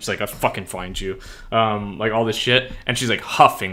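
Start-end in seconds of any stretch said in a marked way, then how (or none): 0.2-1.2 put-on, low, furious muttering. Retelling a character muttering while walking, imitating an angry mutter. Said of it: "she's mad as fuck".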